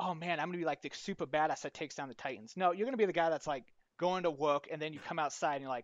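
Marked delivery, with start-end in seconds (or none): none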